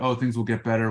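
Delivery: ordinary delivery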